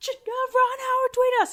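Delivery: mock very high, excited shrieked scream. Retelling a phone call with news of a surprise tweet: imitating own screaming. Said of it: "I'm screaming at him".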